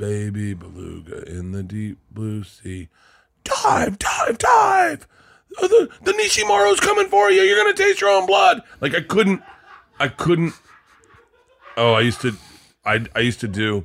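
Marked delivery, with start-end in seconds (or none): 0.0-8.6 very high, swooping put-on voice, swinging pitch. Retelling reading a bedtime book in a Sam Kinison voice. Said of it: "I'd have to do Sam Kinison voice".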